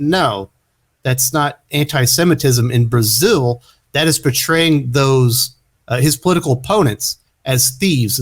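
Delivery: ordinary delivery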